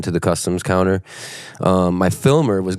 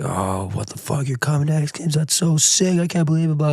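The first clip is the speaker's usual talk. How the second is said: high scream, climbing higher; 9 semitones higher than usual. Retelling a phone call to a brother at customs: imitating his own screaming. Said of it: "screaming into the mic".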